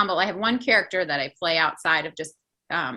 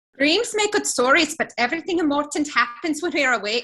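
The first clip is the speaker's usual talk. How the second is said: high-pitched Irish leprechaun-style brogue; 8 semitones higher, 4 dB louder than usual. Taking a turn in an accent game: Irish leprechaun accent. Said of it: "you could do an Irish leprechaun".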